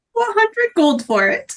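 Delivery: tiny, small voice, pitched high. In a game scene, a character answers an offer of gold in a tiny voice. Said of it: "Does he have that tiny voice?".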